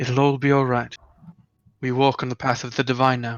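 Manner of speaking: whispered, in a put-on voice. Voicing a character comforting a hugging companion: whispering in character.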